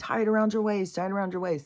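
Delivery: acted-out high, rushed yelling, repeated. Telling a story, acting out a man yelling to the medicine man, imitating a man yelling. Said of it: "the man starts yelling".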